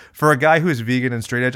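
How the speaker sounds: plain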